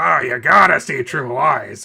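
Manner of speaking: slow, drawn-out, rough and creaky voice. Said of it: "you kind of turned into [name] there".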